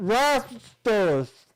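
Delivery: talking through marshmallows. Playing a game, a player tries to say the word with a mouth full of marshmallows. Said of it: "You do have marshmallows in your mouth".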